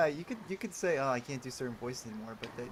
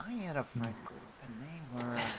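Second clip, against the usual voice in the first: carefully paced-out delivery, every phrase spaced out; 4 dB quieter than usual. Repeating another speaker's words in the style of the Heath Ledger Joker. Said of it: "sounded a little like a Heath Ledger Joker speech".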